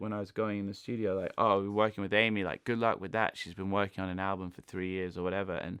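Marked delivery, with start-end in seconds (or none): none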